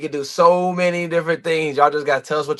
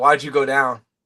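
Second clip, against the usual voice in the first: put-on, dead serious, angry voice; 2 semitones lower than usual. Retelling what a player angrily asked a quarterback: imitating someone dead serious and mad. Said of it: "dead serious".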